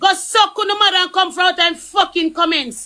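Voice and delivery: Jamaican patois. Speaker tells off people in the comment section, Jamaican patois. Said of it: "Real Jamaican talk".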